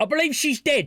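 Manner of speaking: high-pitched Cockney accent.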